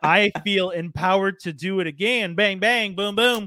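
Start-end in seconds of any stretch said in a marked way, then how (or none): 2.3-3.5 exaggerated put-on Texan accent. Feeling empowered, a speaker does it again: texan accent impression. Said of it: "quite good impression of a Texan".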